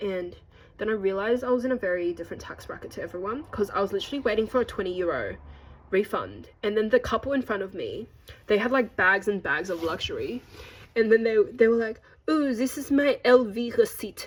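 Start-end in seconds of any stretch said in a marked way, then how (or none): 12.3-14.3 fake French accent, slow and drawn out. Imitating a couple ahead in the airport queue: put-on French accent. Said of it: "I don't know why I have this accent".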